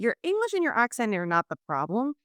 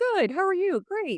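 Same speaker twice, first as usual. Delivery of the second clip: high, upbeat, cheery American small-talk voice. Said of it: "this kind of quirky way of starting with the superficial stuff".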